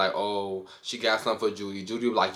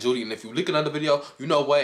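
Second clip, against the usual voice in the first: loud, high-pitched screaming; 5 semitones higher than usual. Retelling a reality show argument: imitating someone screaming. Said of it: "she starts screaming".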